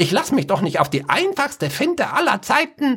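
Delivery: very high, rising, shrill shrieking scold. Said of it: "Der Schwarzmagier keifte".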